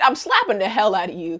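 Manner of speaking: plain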